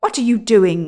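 sudden, loud, angry outcry. The dwarf wakes to find William fitting something on his hands, crying out angrily. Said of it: "he cried angrily".

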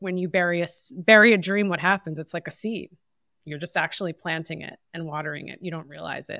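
ordinary talk

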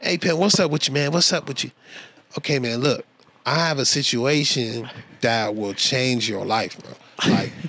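easygoing, casual, buddy-style way of talking. Retelling a phone call offering a gig: imitating Charles's way of talking. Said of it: "that's literally how he talks".

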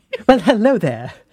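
weird put-on British accent. Joking about the cast's accents, greeting in a corny fake British accent. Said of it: "weird, corny British accent".

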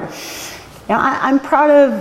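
high, choked up, choking back tears. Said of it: "I'm gonna get choked up".

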